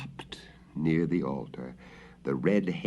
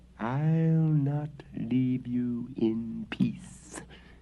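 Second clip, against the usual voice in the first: menacing spectral hiss, slow and stretched; 6 semitones higher than usual. Narrator reads the wraith's threat to the prior, hissing ghost voice. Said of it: "hissed the ghost".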